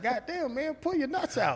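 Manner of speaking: high, soft mock voice.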